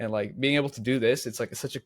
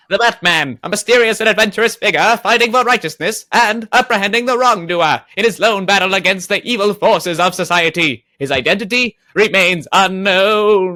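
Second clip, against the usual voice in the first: booming, very loud, high vintage radio announcer voice; 8 semitones higher, 13 dB louder than usual. Asked by another speaker, [name] rereads the Batman description in an old-timey radio voice. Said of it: "can you do this in your little old-timey radio voice?".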